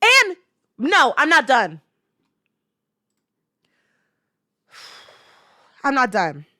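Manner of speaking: heated, fired-up, angry, animated insistence. Talking about the Quiet on Set documentary, angry. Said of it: "I'm mad".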